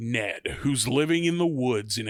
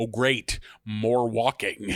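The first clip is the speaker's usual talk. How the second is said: slow, dignified, annoyed delivery; 4 semitones lower than usual. Retelling a scene, quoting the collector: dignified Brian Cox voice. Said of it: "dignified Brian Cox voice".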